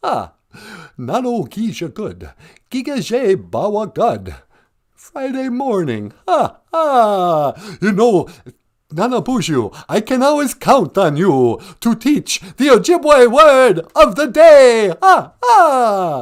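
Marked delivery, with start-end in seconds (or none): 0.0-14.9 belted high, each "ah" stretched long. Calling in to a show in character: Count von Count voice. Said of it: "Count Von Count of, from Sesame Street".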